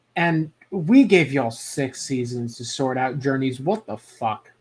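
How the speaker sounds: usual speaking voice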